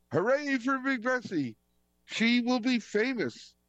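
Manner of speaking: very high, hollered hooray cheer. Reading a children's story aloud, a little character hollers on hearing the news. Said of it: "Baby Nikki hollered".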